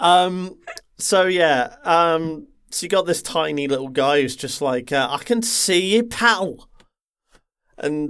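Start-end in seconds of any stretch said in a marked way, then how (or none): 5.1-6.7 rough attempted Scouse accent, pitched up. Describing a tiny little guy, the speaker tries out an attempted Scouse accent. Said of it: "i think that was meant to be scouse".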